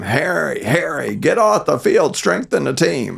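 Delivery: put-on, high-pitched screaming call. Retelling how a dad called from the car during a game: imitating a dad screaming. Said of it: "he'd scream".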